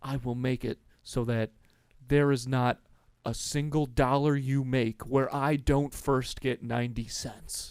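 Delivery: put-on, very intense delivery. Retelling a movie scene on the phone: imitating an intense threat. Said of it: "he gets real intense and he's like".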